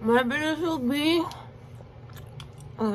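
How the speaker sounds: talking with mouth full, chewing. Tasting snacks, the speaker keeps talking mid-bite: talking with mouth full. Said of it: "I shouldn't talk with my mouth full".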